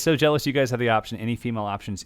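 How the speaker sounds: ordinary delivery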